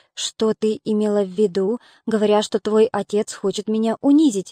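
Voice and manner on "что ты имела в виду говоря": ordinary delivery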